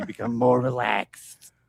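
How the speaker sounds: put-on female smoker's voice. Imagining a hypnotist who is a smoker lady: smoker lady voice. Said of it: "smoker lady".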